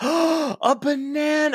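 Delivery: put-on earnest, overjoyed little boy voice, very high, thrilled. Describing a video of a boy opening a wrapped banana, the speaker imitates his earnest excitement. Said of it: "And he's like so excited".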